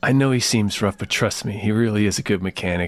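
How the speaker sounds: put-on persuasive, hypnotizing tone. Imagining a man reassuring people about his brother, in a mock hypnotic, persuasive voice. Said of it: "can make this voice that hypnotizes everybody".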